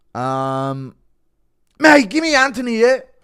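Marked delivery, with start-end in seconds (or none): 1.8-3.0 loud, high-pitched bellowed callout. Doing a requested impression of Coke Connor asking to fight Anthony Smith: Coke Connor impression. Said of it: "impression of Coke Connor asking to fight Anthony Smith".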